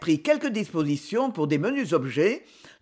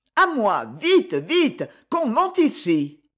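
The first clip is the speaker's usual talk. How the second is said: crying out slowly; 3 semitones higher, 3 dB louder than usual. Leaning out the window as Rudal lunges toward it, she cries out. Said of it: "elle se pencha et cria".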